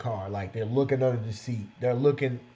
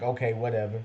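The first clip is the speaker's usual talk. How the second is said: put-on flat, stoic monotone. Retelling how a woman responded to them, imitating her stoic monotone. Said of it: "this stoic, monotoned".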